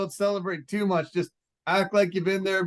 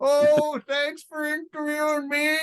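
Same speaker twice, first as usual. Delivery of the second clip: put-on southern Alabama accent, higher; 8 semitones higher than usual. Retelling a fighter's post-fight interview: imitating a fighter's Southern accent. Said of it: "He had such a Southern accent".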